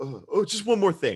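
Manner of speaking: goofy, silly, hammed-up put-on character voice. Putting on a goofy voice to quote the detective Columbo: goofy Columbo voice. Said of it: "I'm gonna put on my goofy little thing".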